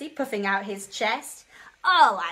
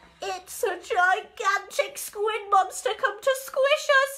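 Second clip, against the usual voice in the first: squeaky little fish voice, very high and frightened; 10 semitones higher than usual. A pufferfish reacts to a gigantic tentacle, squeaky. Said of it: "squeaked Percy Pufferfish".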